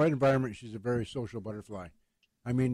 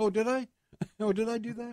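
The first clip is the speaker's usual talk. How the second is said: very high-pitched mother voice; 10 semitones higher than usual. Imitating Mom catching herself after switching tracks: imitating Mom's voice. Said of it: "I can hear her voice".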